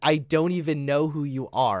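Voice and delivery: plain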